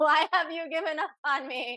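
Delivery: high, wounded, pleading yell. Retelling how a healer had her yell at God: retelling a yell at God.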